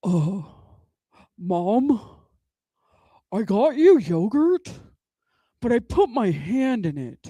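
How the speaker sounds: deep public-radio news announcer delivery. Retelling what the son said at the hotel: imitating son's deep NPR-style voice. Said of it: "His voice sounds like he should be on N P R".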